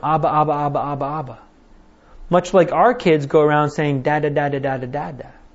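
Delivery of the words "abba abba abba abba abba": put-on toddler baby talk and gibberish. Explaining the word Abba by mimicking a two-year-old calling for their dad; imitating a toddler's baby talk. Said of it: "this little child would run around going".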